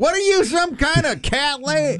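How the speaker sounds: very high-pitched acted-out yell. Retelling what a neighbor was about to yell across at them, mock-yelling as the neighbor. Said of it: "about ready to yell out something like".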